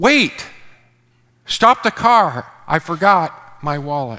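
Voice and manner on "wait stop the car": loud, sudden, full-throated booming bellow. Retelling a moment while backing the car out of the driveway, bellowing. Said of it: "when I bellowed".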